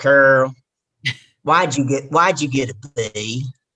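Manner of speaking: heavy, put-on deep-south Southern accent. The speaker retells dad's reaction to a report card, imitating dad's heavy Southern accent. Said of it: "my dad has a heavy accent".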